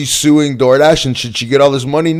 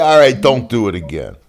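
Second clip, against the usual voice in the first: ordinary talk, nothing marked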